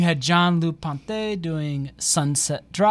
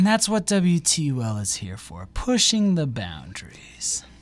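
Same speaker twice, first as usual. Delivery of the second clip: eerie, very scary, spooky voice. Radio host talking about the station pushing boundaries, in a very scary voice. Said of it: "In that very scary voice".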